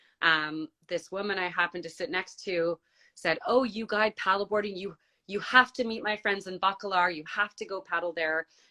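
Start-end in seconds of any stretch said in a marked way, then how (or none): none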